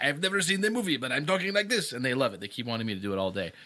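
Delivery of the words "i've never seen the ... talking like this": high, put-on Russian accent. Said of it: "I do an accent like that too".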